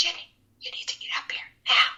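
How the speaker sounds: whispered under the breath, breathy and hushed. Retelling a call on a walkie-talkie from the second ad: imitating someone whispering.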